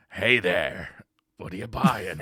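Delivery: deep, loud, slow voice. Imitating the merchant's voice line from the original game: merchant voice. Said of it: "his voice lines aren't as good as they were in the original".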